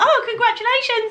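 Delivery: very high near-shriek, voice shooting very high. Retelling own reaction to news heard over the phone, imitating an almost-shriek. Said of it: "you just heard me almost shriek".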